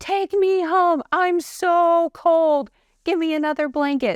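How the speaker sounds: put-on very high, slow, drawn-out drunken yelling. Retelling waking up drunk in a hospital hallway: imitating own drunken yelling. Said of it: "I'm just yelling".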